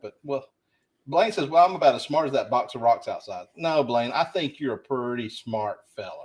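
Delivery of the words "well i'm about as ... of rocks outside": usual speaking voice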